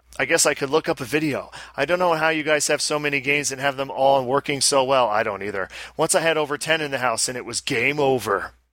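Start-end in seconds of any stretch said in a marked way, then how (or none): none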